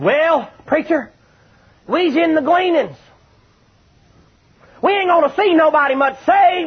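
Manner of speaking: snide sneer, pitched very high. A preacher recounts what a fellow said to him, mock-snide. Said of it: "say to me snidely".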